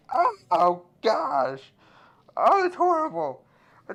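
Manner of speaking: very high, very loud, pained wailing sob. Acting out a woman hurt by something holy, mock crying in pain. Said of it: "she like starts crying a little bit".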